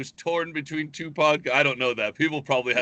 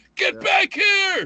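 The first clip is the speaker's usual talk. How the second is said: higher, louder, pretend shouting; 6 dB louder than usual. Acting out a driver who fled a crash, yelling: acting out yelling. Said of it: "just start yelling at".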